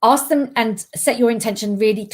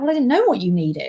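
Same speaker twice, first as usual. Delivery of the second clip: heavy, laid-on mock sarcasm. Acting out a frustrated exchange with a friend, acting out sarcastic dialogue.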